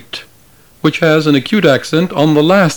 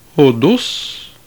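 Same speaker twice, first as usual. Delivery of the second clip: "Hodos", second syllable "dos" lifted in pitch. Teaching musical pitch accent with a repeated word: higher pitch on dos of Hodos. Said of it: "the musical pitch of the second syllable is higher than that of the first syllable".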